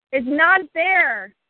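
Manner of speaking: high-pitched, angry, shouted yelling. Repeating a phrase back and forth with another speaker, yelling. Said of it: "I want you yelling".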